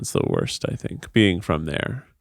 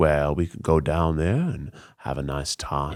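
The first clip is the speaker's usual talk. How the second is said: easygoing, calm, relaxed put-on Georgia Southern accent; 6 semitones lower than usual. Describing southern accents, imitating a calm georgia accent. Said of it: "very calm, like a British accent".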